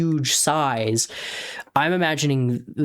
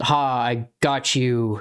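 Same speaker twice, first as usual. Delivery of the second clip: self-satisfied wolf voice. Acting out the wolf's line after biting Armadea: gloating wolf. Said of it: "he's basically kinda gloating a little bit".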